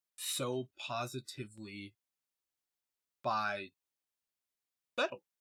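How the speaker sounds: fighting back tears. Speaking about people they love from this community, choked up. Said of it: "I'm starting to get choked up".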